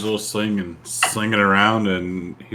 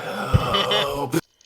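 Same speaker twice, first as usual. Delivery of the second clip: really loud, high stage whisper; 6 semitones higher than usual. In a tabletop game, a player's character calls for help: really loud whisper. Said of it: "I'll whisper really loud".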